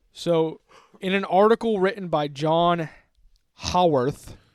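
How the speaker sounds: very loud, angry, hacking, throaty rasp. Speaker names an article's author to the other speaker, sounding angry. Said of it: "It sounded so angry".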